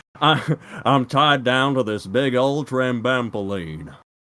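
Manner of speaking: very slow, put-on cowboy drawl. Reading out a quote from screen caps, in a cowboy voice. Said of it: "cowboy voice".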